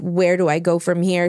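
normal talking voice

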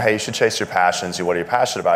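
normal talking voice

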